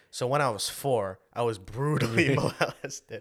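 very slow, drawn-out delivery, dragged word by word. Retelling a comedy scene, copying the comedian's delivery: imitating Bobby Lee. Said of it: "And he said".

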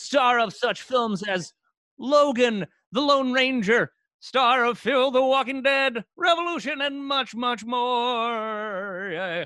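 very high, loud, spooky ghost voice. Host introduces the guest's film credits in a ghost voice. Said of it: "I like that you said that in a ghost voice".

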